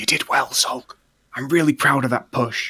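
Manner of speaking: theatrical, voiced, half-whispered stage whisper. Speaking to a creature trying to eat the character: half-whispering. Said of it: "I just whisper while he's trying to eat me".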